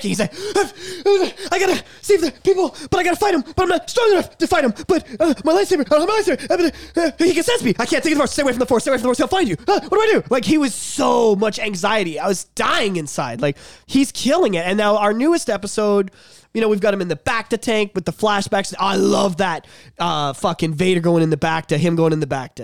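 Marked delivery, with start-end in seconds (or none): 1.5-10.2 high, panicked babble. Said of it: "he's just panicking".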